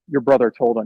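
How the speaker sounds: deadpan, low, dead flat, lifeless delivery. Retelling a grandma's phone call: imitating a dead tone. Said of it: "And in a dead tone".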